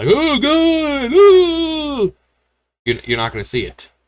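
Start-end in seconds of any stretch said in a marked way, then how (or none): 0.1-2.1 high, loud fake screaming meltdown. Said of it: "fall out of my chair screaming".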